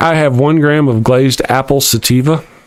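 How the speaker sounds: ordinary talk, nothing marked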